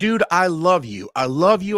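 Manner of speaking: screamed at full volume. Retelling a phone call from a customer: imitating someone screaming. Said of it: "it's screaming at me".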